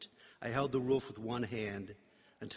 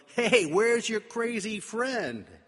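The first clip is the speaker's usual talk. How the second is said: put-on friendly drunken holler, very high-pitched, very loud; 11 semitones higher, 10 dB louder than usual. Two men call out to the narrator from the road, yelled from the road. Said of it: "yelled from the road".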